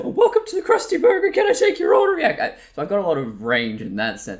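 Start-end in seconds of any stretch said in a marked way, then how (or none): 0.0-2.2 very high, squeaky, loud goofball voice. Showing the range used when goofing around, speaker demonstrates: pitched-up goofy voice. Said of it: "I'll pitch it up higher".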